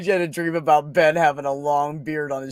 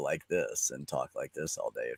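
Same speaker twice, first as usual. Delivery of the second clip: very deep, very low, very quiet voice; 13 semitones lower, 12 dB quieter than usual. Showing how low the voice can go now: speaking really low. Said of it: "I can go down really low now".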